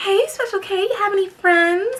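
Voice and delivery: very high-pitched natural voice. Retelling what a friend said on a phone call: imitating a friend's high-pitched voice. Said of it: "a very high-pitched voice naturally".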